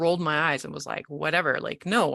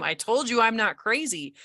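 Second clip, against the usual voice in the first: acted small tearful outburst, high and small; 6 semitones higher than usual. Retelling driving home on the highway in tears, screaming. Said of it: "And I scream".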